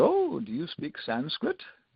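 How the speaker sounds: slow, sing-song, loose put-on German accent. Retelling what a stranger in a library asked: imitating a german accent. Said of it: "Kind of a German accent".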